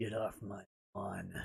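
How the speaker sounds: dropped deep and hushed, barely a murmur. Read out Bad Vibe's message as it asks, in a Clint Eastwood voice. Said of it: "in Clint Eastwood voice".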